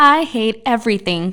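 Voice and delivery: very high, shrill, loud, cheerful exclaiming voice. Voicing a tiny devil exclaiming to the group: most cheerful voice. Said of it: "In her most cheerful voice, the devil exclaimed".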